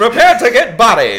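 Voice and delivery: shrill, booming, taunting 1920s Irish brawler voice. Doing a bit about 1920s fighters who pretend to be the fighting irish, in that brawler voice. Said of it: "I have a lot of fun doing that voice".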